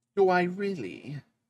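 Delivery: put-on high, proper, well-bred Victorian child voice. Speaking for the dog after she is told she looks beautiful: proper victorian child voice. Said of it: "I sound like a proper".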